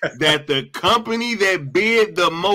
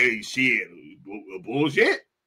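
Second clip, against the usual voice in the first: very deep, slow, drawn-out put-on voice; 9 semitones lower, 5 dB quieter than usual. Acting out how Trump reacts to the news: Trump impression. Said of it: "Trump like".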